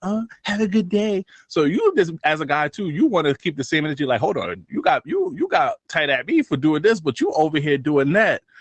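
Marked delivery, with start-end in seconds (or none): 0.0-1.2 put-on tiny, high little voice. A guy mimicking how a girl greets others, in a little mini voice. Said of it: "they be doing that little mini voice".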